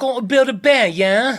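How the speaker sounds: fake British accent, pitched way up, loud. Talking about the company's first store in england, a speaker tries a british accent. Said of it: "what's your British accent?".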